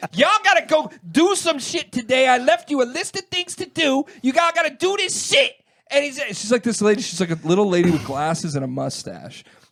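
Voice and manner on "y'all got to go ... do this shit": shrill, very high, loud screaming rant. Retelling a coworker screaming at her kids on the phone: imitating someone screaming. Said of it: "This is how she talks".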